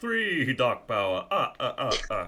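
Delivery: slow, booming voice with swooping pitch. Showing how to count the Dark Power in a Sesame Street Count voice. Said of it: "Sesame Street count impression".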